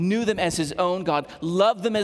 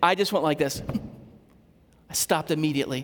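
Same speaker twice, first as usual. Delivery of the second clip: plain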